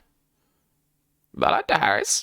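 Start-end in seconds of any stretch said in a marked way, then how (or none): 1.4-2.2 raven-like cawing call. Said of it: "it seems to call back".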